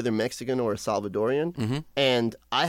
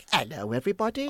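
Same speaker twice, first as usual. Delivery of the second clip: put-on ten-year-old child voice; 4 semitones higher than usual. Speaker recalls arriving in england as a child: imitating himself at ten. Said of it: "10-year-old [name] was in England going like".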